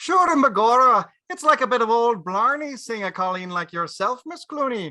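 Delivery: heavy Irish brogue. Greeting a woman he has just been introduced to, in an irish brogue. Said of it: "I never knew you spoke with such an Irish brogue".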